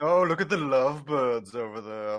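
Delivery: casual, offhand, faintly amused tone. Imitating Magneto being casually amused by a happy couple: casually amused Magneto impression. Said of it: "just being casually amused".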